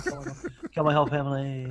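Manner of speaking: bad pinched-nose put-on voice. Answering as Kylo Ren: horrible Adam Driver impersonation. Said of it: "our horrible Adam Driver impersonation".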